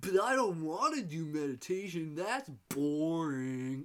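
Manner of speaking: put-on voice, drawn-out and boring. Speaker voices what a listener might think of meditation, like a Jim Carrey impersonation. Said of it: "like Jim Carrey doing an impersonation".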